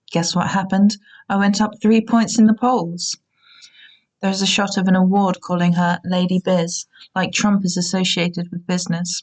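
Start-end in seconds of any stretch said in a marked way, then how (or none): none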